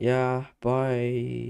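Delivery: downcast, sad, depressed, drawn-out delivery. Ending a long call, saying goodbye, depressed. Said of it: "you sound very depressed".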